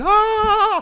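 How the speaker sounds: loud, shrill scream. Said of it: "come running out screaming".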